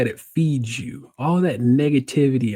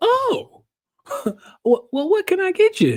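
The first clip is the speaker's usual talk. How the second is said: pitched-up, sing-song, put-on country accent. Retelling a woman's question after the Uber left, little country accent. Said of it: "that's why I'm doing all these little country accents here".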